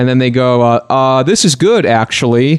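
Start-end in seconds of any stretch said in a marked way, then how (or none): 1.2-2.6 sarcastic, mocking tone of mock approval. Imitating people who quote retweet something bad: imitating a mocking tone. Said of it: "in a mocking sort of way".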